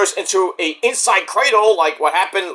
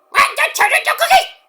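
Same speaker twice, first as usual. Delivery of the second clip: very high-pitched anime-style cartoon voice. Doing a cartoon monster threatening to eat someone: Majin Buu voice. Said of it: "Majin Buu, get out of here".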